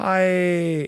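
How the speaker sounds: play-acted phony friendly, high, drawn-out "hi". Imitating a younger sister greeting strangers: imitating a sister's fake greeting. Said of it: "That is a fake Cotty smile, like".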